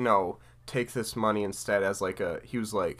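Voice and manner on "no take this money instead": ordinary talk, nothing marked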